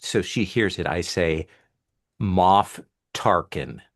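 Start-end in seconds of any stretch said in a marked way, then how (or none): 2.2-3.7 very loud, carrying, announcer-style callout. Announcing a name in character so a target hears: very loud callout. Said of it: "And I say very loudly".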